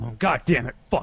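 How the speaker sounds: mock exasperated, worked-up, frustrated, angry outburst. Retelling a friend's bad open mic: imitating Nick Michelson getting mad. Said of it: "he'll get mad".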